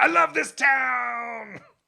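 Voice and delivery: very loud, very high, shrill, raspy wild scream. Telling a story of Picasso firing a pistol into the ceiling, retelling Picasso's scream. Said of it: "And he screams".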